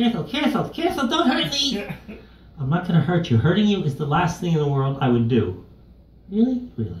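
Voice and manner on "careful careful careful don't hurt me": very high, nervous, alarmed ventriloquist-dummy squeak. A ventriloquist's dummy speaking while its head gets fixed, ventriloquist dummy voice.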